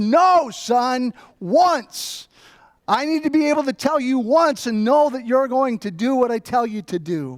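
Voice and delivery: put-on fed-up father voice. Retelling scolding a son who didn't settle down, retelling irritated scolding. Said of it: "Then I was really irritated".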